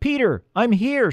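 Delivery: very high, carrying shout. Trapped in a hole, the elf calls out to her searching friend, yelling. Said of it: "she yelled".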